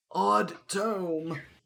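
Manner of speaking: put-on elderly dragonborn voice, pitched high. Narrating what the players hear, in an elderly Dragonborn voice. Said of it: "rather elderly Dragonborn's voice say".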